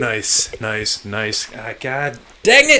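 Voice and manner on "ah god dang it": very loud, drawn-out yelling cry. Speaker forgets the mic is recording and starts yelling. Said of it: "Sorry for yelling into the mic".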